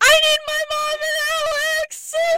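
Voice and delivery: mock distraught yelling. Retelling how a distraught person yelled from bed at goodnights, retelling a distraught yell. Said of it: "she yells from her bed".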